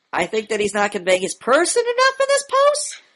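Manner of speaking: final word "post" rising like uptalk. Repeating the other speaker's answer back to point out imitating rising intonation at the end. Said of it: "Your voice is going up at the end".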